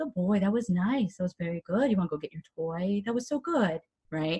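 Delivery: gentle, soft, calm, soothing voice. Demonstrating praise during training, really calm praise. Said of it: "So really calm praise, like".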